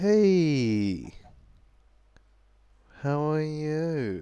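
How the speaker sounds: creepy, very slow, long drawn-out 'hey'. Trying out video intros, greeting viewers: creepy-sounding greeting. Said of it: "that's just creepy".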